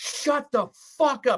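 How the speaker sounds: put-on shrieking scream, very high-pitched outburst. Retelling screaming at a goalie while watching a match: imitating himself screaming. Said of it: "I'm just screaming at him".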